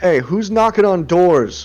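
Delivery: loud shouting, calling out. Voicing an unseen figure asking who is knocking on doors: calling out. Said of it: "as the voice calls out".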